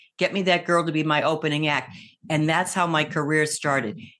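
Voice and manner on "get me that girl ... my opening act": plain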